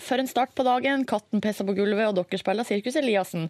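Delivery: normal talking voice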